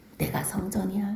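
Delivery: hushed, low whispered declaration.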